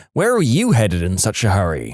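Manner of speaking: plain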